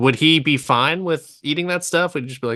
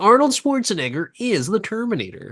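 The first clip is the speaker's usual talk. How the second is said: pitched-up movie trailer announcer voice; 7 semitones higher than usual. Imitating an old movie trailer narrator: imitating an 80s trailer voice. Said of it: "the guy who does the trailer voice".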